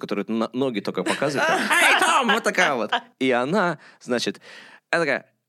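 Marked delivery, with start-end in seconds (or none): 1.5-2.3 very high-pitched, loud hollered call. Retelling how a woman answered in an interview, Mammy Two Shoes voice. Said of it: "это из Тома и Джерри".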